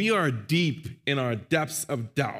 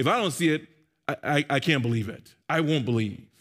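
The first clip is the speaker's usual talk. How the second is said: usual speaking voice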